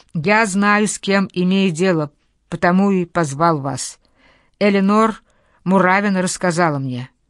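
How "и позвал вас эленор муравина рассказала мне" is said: plain reading voice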